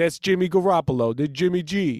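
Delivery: light put-on Italian accent. Showing how an Italian person would say a quarterback's name; little Italian accent. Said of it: "Like a little Italian accent".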